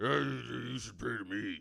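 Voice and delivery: extreme put-on superhero voice. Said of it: "every time I hear Batman, that's what I hear is".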